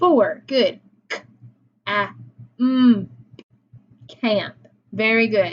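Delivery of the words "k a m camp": camp: k, a, m pulled apart with pauses, then camp. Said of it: "If we segment them out".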